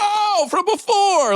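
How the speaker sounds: very high, squealed, delighted "oh".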